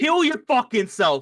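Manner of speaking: shrill, very high, loud yell. Recounting a game moment when another character yells across at Nyx: retelling a yell. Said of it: "And then he yells at".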